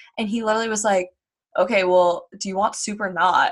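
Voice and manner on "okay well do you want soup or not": wicked, rude, dismissive change of tone. Retelling a boyfriend answering his girlfriend: imitating a rude reply. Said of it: "he was wicked rude to her".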